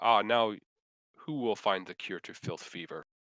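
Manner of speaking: eerie, deep, cackling disembodied voice. Voicing a disembodied voice after a creature drops: deep cackling disembodied voice. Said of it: "it sounds like a deep, um, uh, kind of a cackle".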